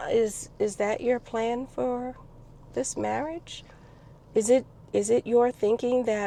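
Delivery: gentle, soft tone. Retelling how you gently asked him a question, in a very soft voice. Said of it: "when I'm pissed, my voice gets very soft. So I gently asked him".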